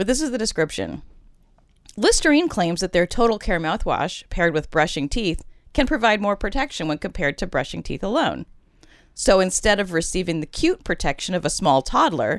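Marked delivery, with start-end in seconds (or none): none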